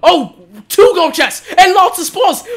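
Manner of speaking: shrill, very loud, very high excited yelling. Streaming a game and finding gold chests, the speaker shouts excitedly to viewers. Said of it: "I am so sorry if I'm shouting right now and hurting your ears".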